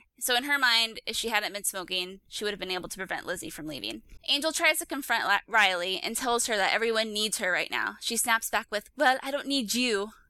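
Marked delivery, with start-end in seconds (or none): 9.0-10.1 snapped line in a bad, clumsy French accent. Recapping a show, quoting Riley snapping back at Angel, bad French accent as Riley. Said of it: "That was like a really bad French accent".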